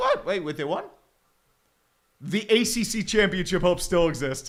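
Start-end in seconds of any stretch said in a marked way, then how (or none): 0.0-0.8 mock stunned, shocked, can't-believe-it, disbelieving reaction. Retelling finding out Pitt won: imitating own past shocked disbelief. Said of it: "It's like".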